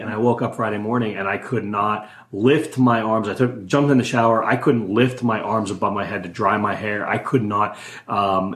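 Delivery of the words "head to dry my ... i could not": ordinary talk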